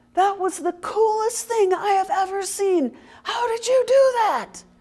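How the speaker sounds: play-acted very high, loud, delighted, gleeful shrieking. Retelling a witness who ran up to him afterwards, imitating gleeful screaming. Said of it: "he's screaming this in glee".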